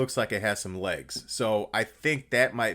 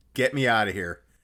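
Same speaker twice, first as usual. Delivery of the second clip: put-on checked-out monotone. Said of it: "he looked so checked out and so monotone".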